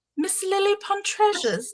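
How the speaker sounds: put-on British pronunciation. Greeting a chat viewer by name: put-on british accent. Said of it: "I'm gonna go back to British just briefly".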